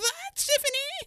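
very high voice, breaking and cracking. Podcast host introducing his co-host tiffany at the episode's end: voice cracking. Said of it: "voice cracked there even more".

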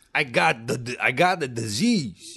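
slow, over-the-top Italian accent. Joking about an accent after surgery: mock over-the-top italian accent. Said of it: "offensively over-the-top Italian accent".

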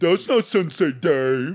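deliberately bad, high, loud dumb-sounding voice. Quoting a movie's funniest line, done in a dumb voice. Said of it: "I can't even do it because it's so bad".

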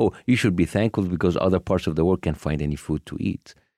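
ordinary delivery

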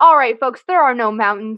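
loud intercom-style announcement voice. Retelling a boy on a plane pretending to talk on a loudspeaker, loudspeaker announcement voice. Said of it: "pretending to be a loudspeaker or like talk on like a microphone".

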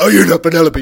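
very loud, high-pitched shout. Retelling a tall man shouting right in a girl's ear: imitating a loud shout. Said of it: "loud as fuck".

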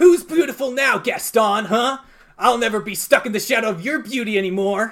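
loud, high-pitched cackling voice. Narrator voicing LeFou as he enters the room, in a LeFou voice. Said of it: "LeFou cackles".

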